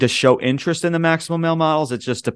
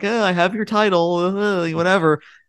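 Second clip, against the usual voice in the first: play-acted gloating, dismissive teasing, pitched up; 6 semitones higher than usual. Retelling a wrestling segment, imitating Asuka teasing about the title. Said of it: "kinda like teasing her".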